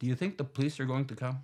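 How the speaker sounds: perfectly composed, very calm, even, matter-of-fact tone. Retelling what a man asked after walking straight up to them, in a very calm voice. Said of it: "he says very in a very calm voice".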